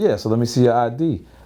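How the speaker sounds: plain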